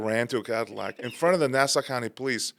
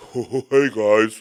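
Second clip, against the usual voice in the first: put-on very loud, thick, heavy Romanian accent; 8 dB louder than usual. Retelling how a Romanian guy greeted his brother and friend, imitating Radu's deep accent. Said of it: "he would have this really deep accent".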